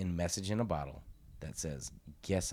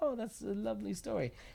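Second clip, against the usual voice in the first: very high, put-on British accent. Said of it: "Is that your British, uh, impersonation?".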